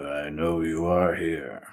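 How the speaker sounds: put-on old, grumbly, unhurried voice. Describing a character's voice, the speaker performs it: grumbly, old, unhurried. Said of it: "in this like grumbly, old, not in any rush kind of voice".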